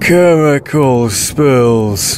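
put-on slurring the words. A creature that once was Bill grips Dez's throat and speaks: slurred voice. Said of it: "it slurred".

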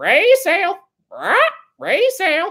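very high squawking talking-bird parrot voice. Speaker asking the live chat to rate their parrot voice: parrot voice. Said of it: "Tell me how my parrot voice is".

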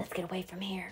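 said on a breath. Jem, after the children lower Dill from the window, breathed. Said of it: "breathed Jem".

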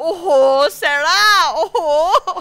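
imitated rising volume. Telling a story, acting out her mom calling sarah, getting louder. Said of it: "her mom is getting like exponentially louder".

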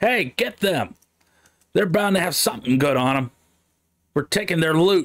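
greedy gangster boss voice. The thugs' boss spots the adventurers and calls to the thugs: yelling over a crowd. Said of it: "the boss of the thugs notices the adventurers and decides that they might have some good loot on them".

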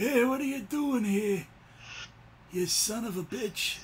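put-on gangster-film mob boss voice with Irish accent. Between recording runs, the speaker does a bit of the Godfather with the Irish. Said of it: "you sound like you're trying to do a little bit of the Godfather".

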